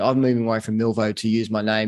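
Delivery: ordinary talk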